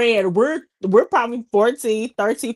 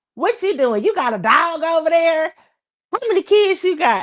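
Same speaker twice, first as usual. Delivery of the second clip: high, goofy, silly put-on voice; 7 semitones higher than usual. Retelling silly phone calls made as kids: imitating silly prank-call voice. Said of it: "we'll just be just making it funny".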